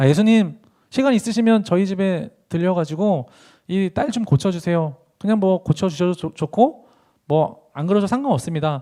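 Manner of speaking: dry, indifferent, flat, level, offhand delivery.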